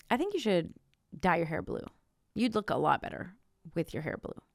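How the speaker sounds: snide, snarky, needling, backhanded tone. Acting out a relative's suggestion in an example: imitating a snarky remark. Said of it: "in, like, a really snarky way".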